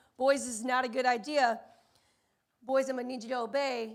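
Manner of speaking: very calm and courteous. Retelling speaking to the boys: imitating own calm, polite tone. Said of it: "very calmly and very politely say".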